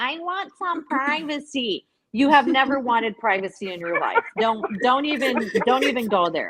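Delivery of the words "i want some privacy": slow, small sassy voice with attitude. Mocking a woman's excuse about wanting privacy: imitating her in a sassy little voice. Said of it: "your little voice for her was funny".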